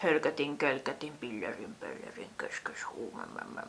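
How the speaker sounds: soft, indistinct mumbling of unclear nonsense sounds. Mocking the movie cliché of a mysterious cloaked figure, mumbled unclear gibberish. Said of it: "mumisee mahdollisimman epäselvästi ja, ja eleettömästi".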